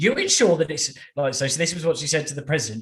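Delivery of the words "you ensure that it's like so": ordinary talk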